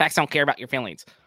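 punchy, rattled out fast and loud. Teasing the other speaker about how he sounds: Ben Shapiro impression. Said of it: "you're talking like Ben Shapiro".

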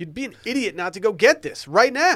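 loud, shouty, high-pitched yelling delivery. Pitching Liquid IV to the others, who ask why: yelling. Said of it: "Why are you yelling at us?".

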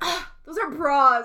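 mock woman voice, loud and angry. Retelling a woman's reply to a man in a store: imitating an angry woman. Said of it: "she was so mad at him".

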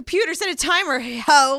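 high-pitched, loud, bossy voice.

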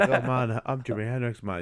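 put-on laid-back, easygoing musician voice. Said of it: "he's like".

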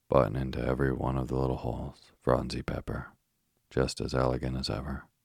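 plain reading voice

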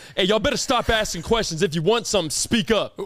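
irritated, angry, scolding voice. Retelling what their coach told teammates at a door, imitating an angry coach. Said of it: "why are you so angry?".

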